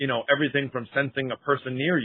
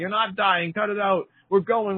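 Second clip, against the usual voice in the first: mock screaming and crying, much higher; 7 semitones higher than usual. Retelling how the speaker's mother shook them, imitating her screaming and crying. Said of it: "screaming and crying".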